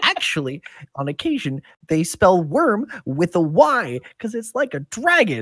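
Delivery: put-on high, cracking teenage voice breaking. Voicing an older brother who just went through puberty: voice cracking from puberty. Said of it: "this voice sounds like it's recently gone through puberty, so it cracks a little bit".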